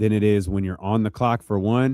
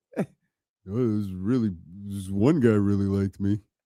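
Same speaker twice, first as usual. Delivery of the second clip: dopey, dim-witted, dummy-like dumb-guy voice; 5 dB quieter than usual. Mocking how Luke talks, doing a dumb-sounding impression of him. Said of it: "Luke sound like a dummy".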